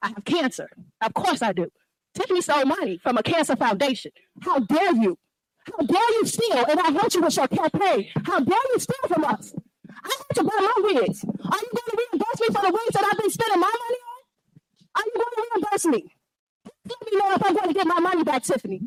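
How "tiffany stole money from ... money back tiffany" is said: high, irate, furious yelling. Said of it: "when she's yelling".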